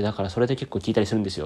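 rattled off super fast.

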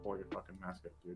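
put-on loud under-breath mutter. Retelling a remark made to a stranger in a store: imitating a loud under-breath mutter. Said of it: "whispers under his breath, but a little loud".

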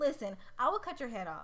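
ordinary delivery

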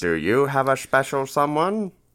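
put-on old-time radio announcer voice. Hosts make a mock Valentine's Day advertisement: 1950s radio announcer voice. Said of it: "Like a 1950s radio announcer?".

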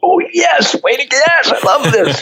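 very high, joyful, drawn-out excited cheering yell. Retelling how an older gentleman celebrated on the ground: imitating excited yelling. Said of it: "he'd raise his fist up going".

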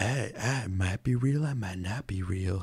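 soft, hushed stage whisper. Complaining about a game's voice acting, quoting Sephiroth speaking to Cloud: imitating Sephiroth half-whispering. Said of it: "He's like kind of like whispering to you too".

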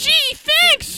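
put-on very high little boy voice. In an improv challenge, voicing a boy at a baseball game in a little boy voice. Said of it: "a voice goes through my head".

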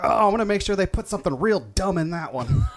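high, held-back yelling tone, kept small. Voicing a man just shot in the arm, yelling. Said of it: "he's just yelling like".

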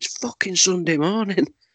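acted-out, very high-pitched, yelled complaining protest. Retelling shouting at workers drilling up the pavement one lockdown morning, retelling a shout. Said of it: "And I shouted out".

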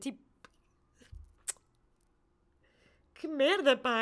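crying, tearful outburst, talking through tears. Speaker talks about having people like these in life, crying. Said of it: "Agora estou a chorar outra vez".

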